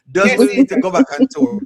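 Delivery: loud, high calling out, announcer-like.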